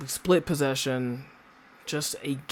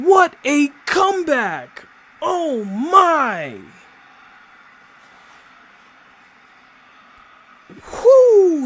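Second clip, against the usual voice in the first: thrilled, swooping, very loud, very high ecstatic whoop; 14 semitones higher, 14 dB louder than usual. Commenting on a Coventry City match that was just won, excited. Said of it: "You can hear the excitement in my voice".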